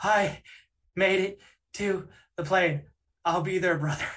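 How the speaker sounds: acted, winded words pushed out short of breath. Retelling a business partner's call after running to the plane, imitating someone out of breath. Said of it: "completely out of breath".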